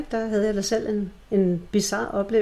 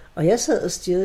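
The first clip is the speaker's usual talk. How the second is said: usual speaking voice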